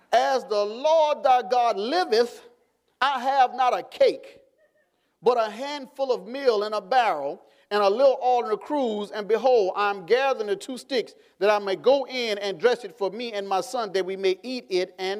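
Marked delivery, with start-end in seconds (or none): none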